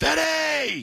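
high, shouted scream.

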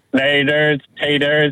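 mechanical robot voice. A caller, asked to say goodbye to the hosts, signs off in a robot voice. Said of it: "Say goodbye in your robot voice".

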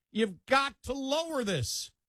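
screaming, high, slow, pleading delivery.

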